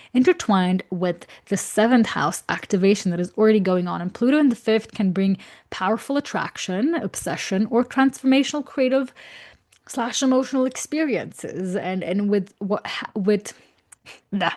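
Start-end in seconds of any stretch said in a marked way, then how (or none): 11.8-14.5 stuttering and stumbling over words, said more quietly. Explaining something to listeners and tripping over the words, stuttering. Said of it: "I'm stuttering".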